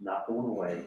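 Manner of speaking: put-on tough-guy voice with New York accent. Retelling the caller's threat on the phone: imitating a tough guy with a New York accent. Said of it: "the tough guy routine sounded like it was coming out".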